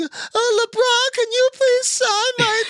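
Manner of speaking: put-on very high, slow, pleading little kid voice. Retelling how a kid asks a star player to sign something, imitating a kid begging.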